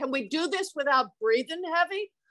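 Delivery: put-on heavy New Jersey accent. Retelling what a man said to her; very new jersey accent. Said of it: "Only in a very New Jersey accent".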